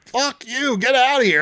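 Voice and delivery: acted-out, high-pitched screaming. Retelling how the speaker screamed at a woman knocking at the window: retelling own screaming. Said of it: "I'm screaming".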